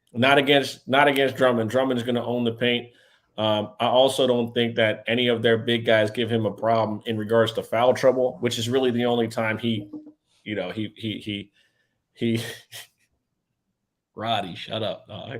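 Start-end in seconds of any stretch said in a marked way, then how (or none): 12.2-15.4 slow, holding back laughter, laughing through the words. Telling another speaker to stop while trying not to laugh: laughing while talking. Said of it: "I'm trying not to laugh".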